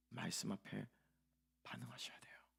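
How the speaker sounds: dramatic, soft, hushed whisper.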